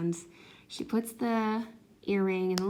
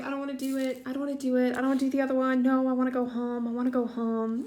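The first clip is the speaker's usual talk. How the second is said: put-on high-pitched, sobbing little girl voice; 5 semitones higher than usual. Parent retelling their crying child's pleas, imitating a crying child. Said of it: "she's crying".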